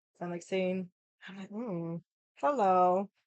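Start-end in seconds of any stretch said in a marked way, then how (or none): 1.5-3.1 put-on awkward flirty tone. Retelling hitting on a guy at a bar, reenacting own awkward flirting. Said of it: "So this is how awkward I am".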